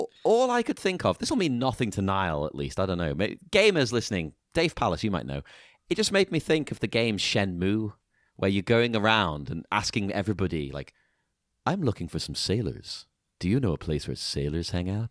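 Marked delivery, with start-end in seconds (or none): 11.7-15.1 seedy, shady-sounding voice. Quoting a game character asking about sailors: Val Kilmer impression. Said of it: "pretty good Val Kilmer impression you just did".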